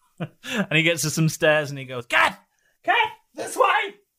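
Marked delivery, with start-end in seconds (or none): 2.1-3.9 loud calling out at a very high pitch. A man reaches some stairs and calls his companion Kat, loud call. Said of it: "Why are you so loud all the time?".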